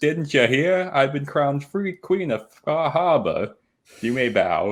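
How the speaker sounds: sarcastic, obnoxious, very high put-on Boston accent. Retelling what she said when she walked in to the Nakanos, obnoxious Boston voice. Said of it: "doing an obnoxious Boston voice".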